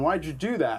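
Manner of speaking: ordinary delivery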